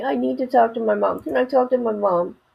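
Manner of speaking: creaky, whiny, fake-crying baby whimper. Mocking a man who wanted to talk to his mommy, imitating a baby pretending to cry. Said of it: "He sounds like a mini baby that's pretending to cry".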